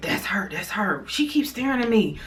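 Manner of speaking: whispered aside, hushed, under the breath. Retelling what you told Bob at the lunch table when the girl walked in, acting out a whisper. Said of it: "I'm like whispering to him like".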